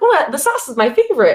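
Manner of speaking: put-on thrilled, eager voice. Retelling how you told her the sauce is your favorite, retelling a really excited voice. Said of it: "in like a really excited voice".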